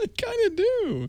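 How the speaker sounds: silly high mock voice.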